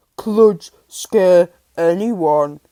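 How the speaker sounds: deep, loud dog voice. Reading a story, the great dog Kludge answers Holly: deep Kludge voice. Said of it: "the great dog said in his deep voice".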